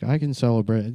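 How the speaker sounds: normal talking voice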